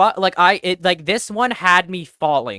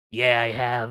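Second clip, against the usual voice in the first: deep, very low, soft, quiet male voice, close; 7 semitones lower, 6 dB quieter than usual. Retelling how an actor answered right next to their ear: low manly voice. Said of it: "like a low manly voice just go".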